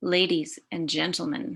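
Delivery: normal talking voice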